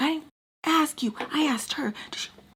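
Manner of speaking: very angry, high-pitched, furious voice. Retelling a woman answering the speaker's interruption; mock-furious. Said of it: "she's like super mad".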